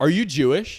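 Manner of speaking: loud, yelled-out shout. Comedian recounting a set, retelling a heckler's yell. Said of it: "she yells out".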